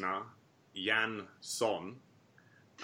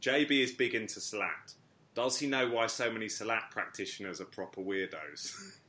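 ordinary talk

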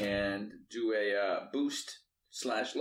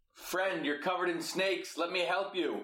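high-pitched yell in a character voice; 7 semitones higher than usual. Playing a character yelling to a tied-up foe: yelling in character. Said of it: "I'm gonna yell".

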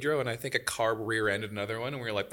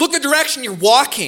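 shrill, full-throated, very loud, high yell; 10 semitones higher, 9 dB louder than usual. Retelling what they yelled at a guy after bumping shoulders: retelling a yell. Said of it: "And I yelled that right in front of his girlfriend".

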